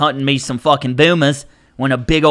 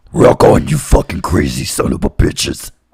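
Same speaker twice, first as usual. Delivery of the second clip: put-on demonic voice; 11 semitones lower than usual. Asked to do the demon voice one more time for the host; demon voice. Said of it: "Can you do the demon voice one more time".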